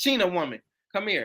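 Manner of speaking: usual speaking voice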